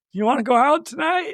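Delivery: woozy, dazed, knocked-silly voice, pitched high. Retelling a movie scene of a concussed player: imitating a dazed, concussed voice. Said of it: "through his concussion, he's like".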